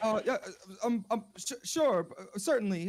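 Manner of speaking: scared, frightened stammering full of ums. Asked by the father to pass the wine, the boy answers stuttering and scared. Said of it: "I'm kind of stuttering and scared".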